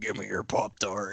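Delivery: low, hushed, sinister, menacing demon-dog voice. Telling a story about a dog that looked at him, doing its put-on sinister dog voice. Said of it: "in this most sinister voice".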